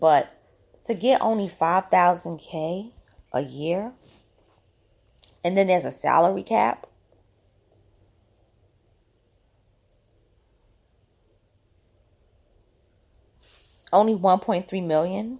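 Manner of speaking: deliberately slow, angry voice. Discussing players' salaries, speaking slow because it angers the speaker; slow and angry. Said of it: "I'm speaking slow because it angers me".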